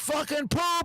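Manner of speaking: high scream at the top of the lungs. Speaker retells screaming in character after a kid asked him to, retelling a scream. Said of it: "I'm screaming at the top of my lungs".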